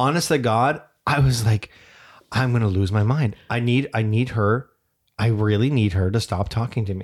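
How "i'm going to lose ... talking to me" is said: normal talking voice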